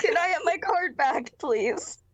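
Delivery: speaking through giggles. Retelling a woman's request to get her card back, imitating her laughing while talking. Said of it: "She's actually laughing".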